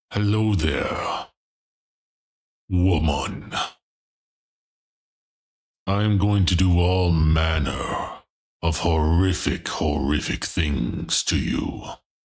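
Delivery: deep, low growling voice. Playing a Dark Lord threatening a woman, in a deep growl. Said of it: "you make Dark Lord threats in a deep growl".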